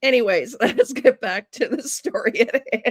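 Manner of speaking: laughing while talking. Trying to get back to the story: laughing while talking. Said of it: "if I can stop laughing".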